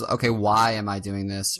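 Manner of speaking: ordinary talk, nothing marked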